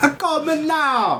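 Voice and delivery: very high, slow, drawn-out put-on leprechaun voice. After someone is called the ginger Miss Cleo, do a Miss Cleo impression like a leprechaun. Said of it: "It sounded like a leprechaun".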